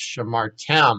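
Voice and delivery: shamartem with stress on the final syllable -tem. Explaining where the accent falls in shamartem: stress on last syllable of shamartem. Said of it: "now the accent's on the last syllable".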